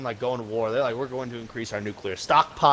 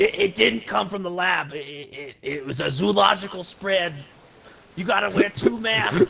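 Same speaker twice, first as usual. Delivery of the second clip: put-on New York accent, pitched higher; 7 semitones higher than usual. Mocking a public health official's claims about the virus's origin: Fauci impression. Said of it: "my Fauci impression".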